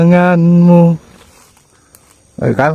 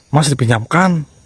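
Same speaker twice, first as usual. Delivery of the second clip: ordinary talk, nothing marked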